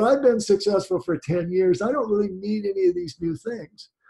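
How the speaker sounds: usual speaking voice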